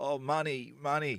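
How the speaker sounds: pitiful, high, pleading beggar voice. Lying on the pavement, speaker pranks his friend Johnny: acting like a poor beggar. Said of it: "like I was some poor bastard".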